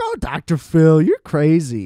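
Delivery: put-on amused laughing tone, sing-song and drawn out. Retelling a woman's remark about her TV appearance: imitating someone laughing. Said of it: "was like smiling and laughing".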